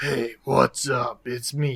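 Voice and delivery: gruff, rough-edged, casual regular guy voice. Show how your corporate character talked at the start, in a gruff v voice. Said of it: "still with my gruff".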